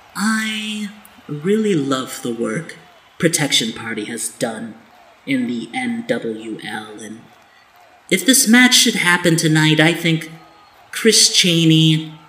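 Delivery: musing aloud with a swooping tune. Cooper Page, at her desk in the back, muses to herself, then the audience: Cooper Page musing aloud. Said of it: "we see [name] Page in the back at her desk with her trusty intern next to her, / [name] is kind of musing to herself and then to the rest of the audience".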